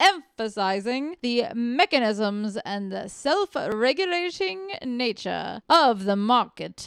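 put-on prim, very proper reading voice. Asked to read a passage aloud, the reader uses a very proper voice. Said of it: "That's very proper".

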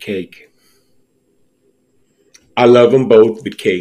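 a little sad and reluctant. Answering a cake-or-pie question from the other speaker, kind of sad. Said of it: "You sounded kind of sad".

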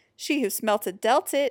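plain

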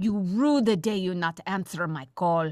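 put-on Russian-accented English. The Russian character finally leaves a phone message, in a Russian accent. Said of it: "Nice accent work".

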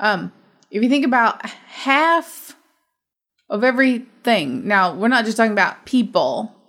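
choked-up voice, emotion catching in the throat. Discussing a movie with another person, speaking while choking up. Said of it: "choking up here, not because of this movie".

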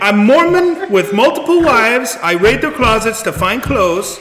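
fake German accent kept up throughout. Applying in character for the drag queen position: put-on German accent. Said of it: "I have a Z-, a German accent".

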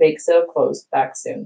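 plain reading voice

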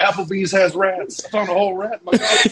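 put-on yelling. Retelling a film scene of a man thrown out of a restaurant: imitating someone yelling. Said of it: "he's yelling".

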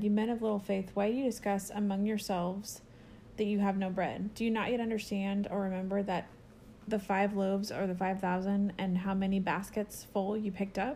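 ordinary delivery

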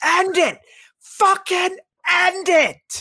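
very high, loud, drawn-out, fed-up angry yell. Retelling what they yelled on seeing a count-out brawl: retelling a yell. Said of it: "I just started yelling".

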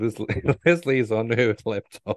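laughing and giggling while talking. Trying to tell a funny story but laughing while talking. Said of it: "I can't keep a straight face".

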